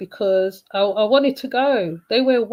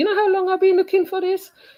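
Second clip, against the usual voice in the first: put-on pitched-up Trinidadian accent; 9 semitones higher than usual. Retelling what a man said on getting the cigar: imitating a Trinidadian accent. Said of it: "In his Trini accent".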